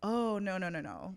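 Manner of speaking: normal talking voice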